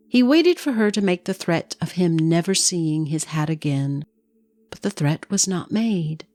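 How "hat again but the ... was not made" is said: ordinary delivery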